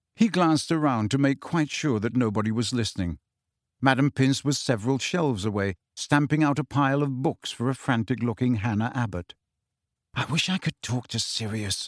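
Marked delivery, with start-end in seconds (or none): 10.2-11.9 soft, quiet mutter, half to oneself. Glancing round so nobody hears, Harry speaks to Ginny, muttering. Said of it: "he muttered".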